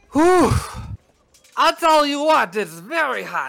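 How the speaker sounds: speaking up loudly. Retelling a man talking to nobody while walking down the stairs, raised voice. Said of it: "He raises his voice".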